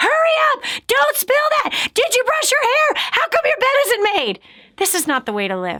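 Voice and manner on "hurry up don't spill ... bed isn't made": mock shrill, high-pitched screaming. Picturing a parent rushing the kids to school, acting out screaming at kids. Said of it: "you're screaming at your kids".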